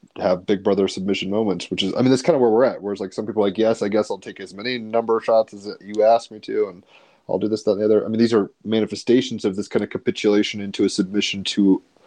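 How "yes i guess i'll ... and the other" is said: ordinary talk, nothing marked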